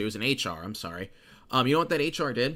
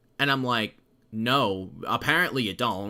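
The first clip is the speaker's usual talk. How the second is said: ordinary delivery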